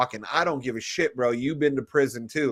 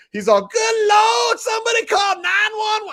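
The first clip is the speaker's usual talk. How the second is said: put-on Southern accent, higher, louder, slower; 6 dB louder than usual. Speaker retells the man who headbutted him getting maced, in an Aunt Jemima voice. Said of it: "he's all".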